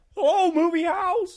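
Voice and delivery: belted out very high, loud, with pure joy. Quoting It's a Wonderful Life: elated Jimmy Stewart impression. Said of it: "When he's elated".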